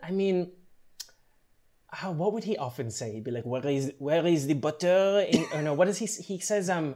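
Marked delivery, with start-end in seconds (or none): 3.4-5.3 put-on French accent. Answering a request to impersonate Bruno: Bruno impression with French accent. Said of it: "can you do his voice?".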